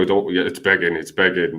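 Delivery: ordinary talk, nothing marked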